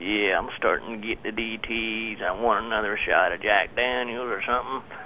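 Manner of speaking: low, dragged-out, strung-out junkie voice. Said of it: "talks like a junkie for [name]".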